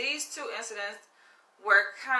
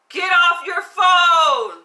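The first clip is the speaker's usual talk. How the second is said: booming, very high yell, phone drawn out; 9 semitones higher, 12 dB louder than usual. Retelling a voice that shouted into his ear near a park, retelling a loud shout. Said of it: "a loud voice".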